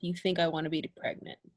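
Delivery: very low, very quiet mumble, barely audible. Playing a character who mutters a bitter reply: mumbling under breath. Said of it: "I mumble under my breath".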